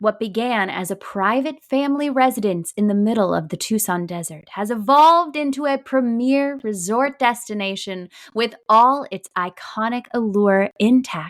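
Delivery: dramatic reading, narrator-style voice. Taking over the website history reading: dramatic reading voice. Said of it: "I have to do a, a dramatic voice too now".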